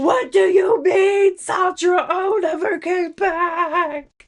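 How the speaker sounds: put-on very high scream, end stretched out. Imagining own soul in another world: imitating own soul screaming.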